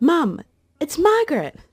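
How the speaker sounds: mock, very high, swooping little boy calling out. Retelling the moment the son saw the old photo: imitating a child shouting. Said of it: "he shouted".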